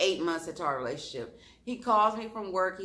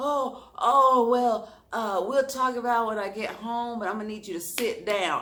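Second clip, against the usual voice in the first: quivering, hesitant, faltering raised voice; 5 semitones higher, 6 dB louder than usual. Retelling what he said to her about talking later, imitating a quivering voice. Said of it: "I could kind of hear his voice quiver".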